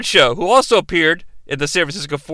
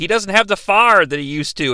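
ordinary talk, nothing marked

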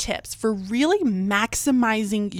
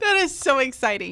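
grinning voice, higher; 4 semitones higher than usual. Reacting to exciting news with another speaker, smiling while talking. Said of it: "I am full-blown smiles right now".

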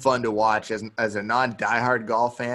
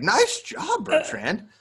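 put-on amazed, astonished, very high-pitched voice; 13 semitones higher than usual. Retelling what another fisherman said after a good first day: imitating surprised praise. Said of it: "like it was a miracle that it happened".

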